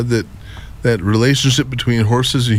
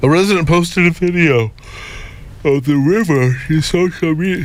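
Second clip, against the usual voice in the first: yawning while talking, higher pitch; 5 semitones higher than usual. Reading a news report about a river, yawning while talking. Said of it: "I'm yawning in the middle of this".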